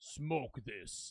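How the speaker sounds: scary, hushed, soft-spoken, quietly threatening voice. Imagining the world's tallest man handing over a cigarette: Sultan's scary voice. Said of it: "in that scary ass voice".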